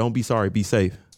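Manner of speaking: ordinary talk, nothing marked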